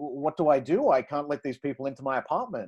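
normal talking voice

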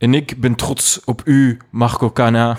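slow, drawn-out narrator-style film voice-over delivery. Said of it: "[name] in voice-over".

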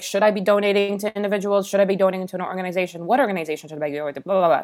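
rushed, tumbling, rapid-fire delivery. Recalling reaching out to Shivani about donating, speaking fast on purpose. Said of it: "I'm speaking fast on purpose".

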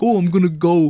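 put-on belted out loudly in a Canadian accent. Recapping a favourite movie scene, doing Lou's Canadian accent. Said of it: "The only Canadian accent in the movie".

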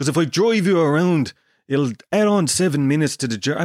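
bad fake Dublin accent drifting South African. Retelling what a driver told him about the journey, in a bad Dublin accent. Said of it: "Why do I sound South African?".

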